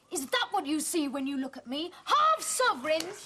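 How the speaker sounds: angry yelling. Arguing with a family member over being seen as income: shouting in anger.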